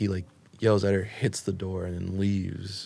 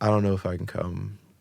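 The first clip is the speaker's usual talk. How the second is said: normal talking voice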